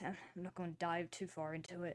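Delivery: ordinary talk, nothing marked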